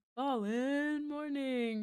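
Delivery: high, big wrestling ring announcer call. Chatting about art commissions, the speaker breaks into a WWE announcer voice. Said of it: "W W E announcer voice".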